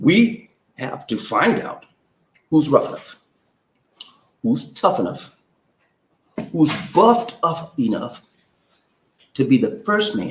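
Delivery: slow, deliberate, spaced-out delivery.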